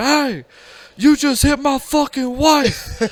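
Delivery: yelling with very high pitch, drawn-out and furious. Retelling how a husband confronted the driver: imitating someone yelling. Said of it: "he's just yelling at the dude".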